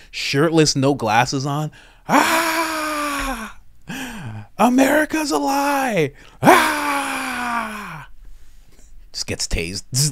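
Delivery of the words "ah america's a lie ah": put-on unhinged scream, very high, very slow, "ah" stretched. Imagining a shirtless man rushing the Capitol, screaming like Alex Jones. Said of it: "just screaming like Alex Jones".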